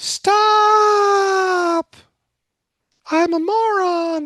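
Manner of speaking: very high, shrill screeching yell, stretched-out stop. Speaker voicing a data point that stands out in the system, mock screaming. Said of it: "This one's screaming right here".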